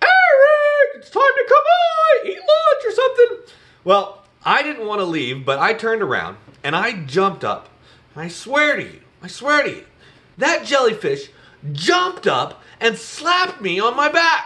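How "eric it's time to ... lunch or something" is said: very high, loud, carrying yell. Recalling his mom calling him from down the beach, retelling mom's yell.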